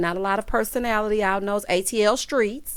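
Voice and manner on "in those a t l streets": normal talking voice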